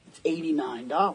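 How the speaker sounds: hushed, very quiet, confidential undertone murmur. Retelling a drive-through worker leaning over: imitating someone speaking quietly. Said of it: "leans over and she gets all quiet".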